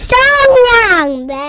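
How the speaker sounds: yelling loudly. A host addressing listeners on air, shouting into the mic. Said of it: "ไม่ต้องตะโกนนะ".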